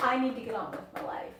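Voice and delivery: frustrated, fed-up, exasperated tone. Complaining about babysitting for a sister's kids: frustrated. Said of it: "You sound frustrated".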